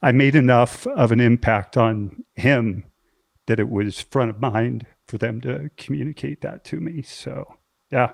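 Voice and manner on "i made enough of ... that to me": choked up, halting voice breaking mid-sentence. Speaking to a close friend about a man who died; choking up. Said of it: "choking up a little bit with this".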